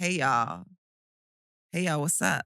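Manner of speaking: clumsy, bad, put-on American accent. A british speaker, asked to do an american accent, tries a bad american accent. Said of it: "Give me your like best American accent".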